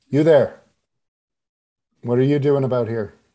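put-on shouted older male voice. Narrating a walk down a back alley, voicing a man behind you: older man shouting. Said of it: "it is an older male voice".

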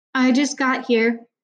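dutiful, obedient, half-swallowed mumble. Narrator reads a character's reply under another's pleading gaze, mumbled obediently. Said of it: "Finn mumbled obediently".

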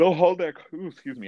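talking through a yawn. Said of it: "I'm yawning".

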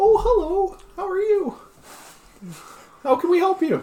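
very high-pitched, tiny, squeaky gnome voice. Two unseen gnomes greeting someone who walks in, in little squeaky voices. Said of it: "these two like little squeaky voices that say".

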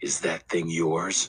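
hushed, gentle, soft, low voice. Narrator reads a boy asking whether the sprawled bike is his; softly. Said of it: "He asked softly".

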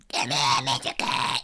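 put-on cat voice, very low and slow. Calling the cat over, in a put-on cat voice. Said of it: "Let me do my cat voice".

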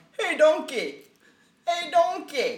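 loud, slow, badly done bellowing ogre voice. Retelling how someone kept calling out to Donkey as Shrek, bad Shrek impression. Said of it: "That's the worst Shrek ever".

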